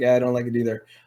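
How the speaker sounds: mock flat deadpan delivery. Retelling another speaker cancelling a show: imitating a deadpan delivery. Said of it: "you have a deadpanness".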